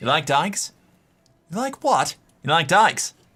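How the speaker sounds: put-on Irish brogue on every word. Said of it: "where you learned the Irish accent".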